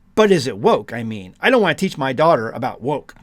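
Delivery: ordinary delivery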